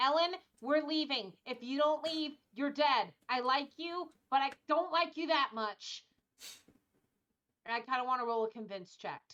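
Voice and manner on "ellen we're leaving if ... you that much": shouted, yelling, raised voice. Voicing a character urging another to leave: yelling at ellen. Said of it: "I'm going to yell at Ellen".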